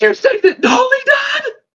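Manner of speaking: screaming in alarm. Voicing a character running up, asking about Dolly: screaming in alarm. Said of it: "he's screaming".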